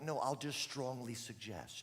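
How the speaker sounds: plain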